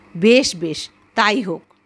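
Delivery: plain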